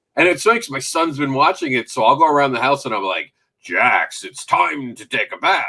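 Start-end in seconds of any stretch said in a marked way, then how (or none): 3.7-5.7 slow, deliberate, drawn-out cartoon robot voice. Retelling calling a son to his bath: Transformers voice. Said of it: "I'll do that voice".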